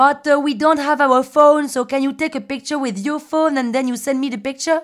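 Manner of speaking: put-on charming Spanish accent. Retelling a group of guys asking for a photo, charming spanish accent. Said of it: "avec un petit accent espagnol charmantissime".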